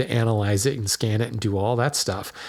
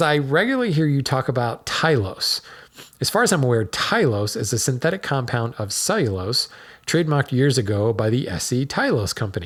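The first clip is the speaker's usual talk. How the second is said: usual speaking voice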